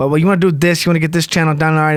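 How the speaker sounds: blunt, straightforward New York guy voice. Retelling the seller's call: imitating Gabe, New York guy. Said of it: "just a fucking straightforward New York guy".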